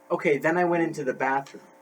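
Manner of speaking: ordinary talk, nothing marked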